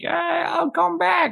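put-on maniacal laughing, very high and slow. Retelling a movie character's last line: imitating maniacal laughing speech. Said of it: "laughing like a maniac".

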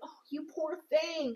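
snide, mean-sounding sarcastic sympathy. Retelling a friend's reply to hearing about an injury: imitating a sarcastic tone. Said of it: "That's sarcastic as fuck".

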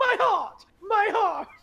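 put-on very high, loud, slow panicked outburst. Retelling a movie scene, imitating a character freaking out. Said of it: "she's freaking out".

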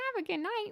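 very high, duck-like cartoon voice. You are having fun showing another person the voice you wish you could do, in a Donald Duck voice. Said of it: "I wish I could do the Donald voice".

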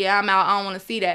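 ordinary delivery

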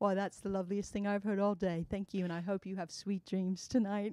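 put-on gracious, courteous, polite English accent. Retelling an elevator ride, the speaker voices the man's reply in an English accent. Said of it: "Your English accent is on spot".

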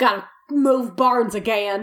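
put-on Southern accent. Voicing a character caught hiding in a barn: southern accent. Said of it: "everyone in this story is Southern".

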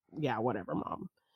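careless, indifferent, dismissive, offhand tone. Retelling a movie character's reply to her mom: imitating a dismissive attitude. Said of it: "her attitude was just like".

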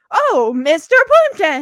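very loud, high, pointed call. Recounting someone alerting a napping man that his father has arrived, retelling a loud warning call. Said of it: "like trying to say it so loudly".

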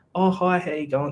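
mock patronizing, talking-down tone, pitched high. Describing how strangers first greet them and their nan, mimicking a patronizing voice. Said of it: "that bit of a patronizing voice".

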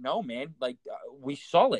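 slow, earnest, completely dead-serious tone. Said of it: "he looks at me all serious".

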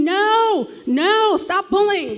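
mock, shrill, very high-pitched screaming. Parent recounting yelling at their six-year-old son pulling a leash: retelling own screaming. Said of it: "And I'm screaming".

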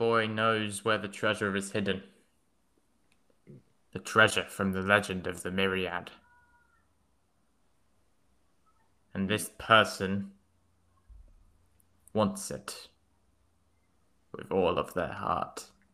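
small, sickly-sounding goblin voice. Game master voices a goblin answering the players' question, small goblin voice.

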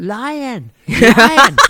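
very high, very loud gazelle alarm cry. Explaining a gazelle's fear signal when a lion approaches, in a gazelle voice. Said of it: "What kind of voice is that?".

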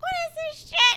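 very high, very loud hollering. The speaker retells her mom yelling while she was on a call: retelling a yell. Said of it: "And she's yelling".

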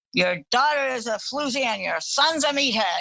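put-on drunk, argumentative voice. Retelling drunk parents having a fake argument: imitating a drunk dad's fake argument. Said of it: "her dad would go".

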